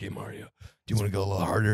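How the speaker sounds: hushed whisper, close up, right in the ear. Retelling how the trainer coached during a workout: imitating a whisper. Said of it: "whispers in my ear".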